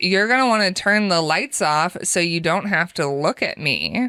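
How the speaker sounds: playful, flirty, coaxing tone. Retelling what a date said in the bedroom, imitating a flirting tone. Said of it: "He said it in kind of a flirting tone".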